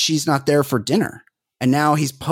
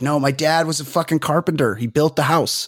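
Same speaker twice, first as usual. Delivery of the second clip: ordinary delivery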